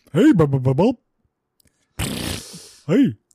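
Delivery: big, goofy put-on dumb guy voice. Greeting the host right after being introduced, in a big dumb guy voice. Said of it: "This is just my big dumb guy voice".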